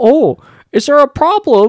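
loud, very high, fully affected theatrical actor voice. Imitating a strange line reading from Venom: Tom Hardy in Venom impression. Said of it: "since Venom, where he was like".

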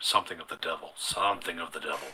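very low, quiet muttering under the breath. Two guards keep muttering among themselves: muttering. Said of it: "You kind of hear them muttering".

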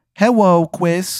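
put-on small, high, childlike little kid voice. Voicing a giant fly that greets the listener: little kid voice. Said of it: "It's got the voice of, like, a little kid".

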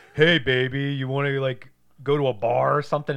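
loud, slow, obnoxious, brutish come-on tone. Retelling a movie scene, voicing the biker on the bus: imitating an obnoxious american brute. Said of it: "obnoxious, ignorant American asshole".

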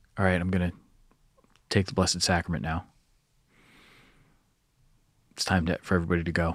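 hushed, soft half-whisper. Retelling telling a group it is time to go: imitating a half-whisper. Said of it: "I had kinda whispered".

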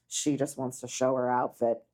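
put-on low muttering. Recapping a scene, the speaker quotes an aside under her breath: imitating Dory muttering. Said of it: "under her breath go".

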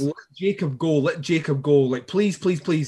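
ordinary talk

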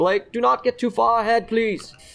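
high-pitched call. In a played scene, the speaker's character calls to blake walking ahead, yelling after blake. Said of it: "I try to yell after Blake".

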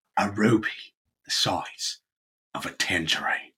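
put-on English accent. Taking a turn in a round of impressions: Michael Caine accent. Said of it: "delivered in a Michael Caine accent".

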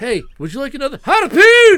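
put-on very loud, very high, shrill old English whaler hail. Recalling how college buddies talked when drinking harpoon: old english whaler voice. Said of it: "say it like we were old English whalers".

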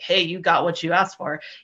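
ordinary delivery

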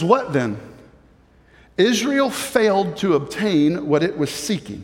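slow delivery. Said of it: "but say it slower because that was a lot to take in".

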